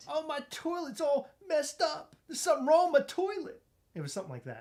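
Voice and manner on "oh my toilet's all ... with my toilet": put-on very high-pitched elderly woman voice with New York accent. Redoing another speaker's impression of an old lady, in a New York accent. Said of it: "She had a New York accent".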